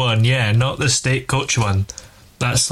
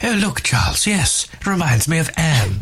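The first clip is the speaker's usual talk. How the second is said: put-on regal voice, pitched higher; 4 semitones higher than usual. Joking on air about the royals looking at a horse, answer Charles in a Camilla impression. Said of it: "that was a good impression".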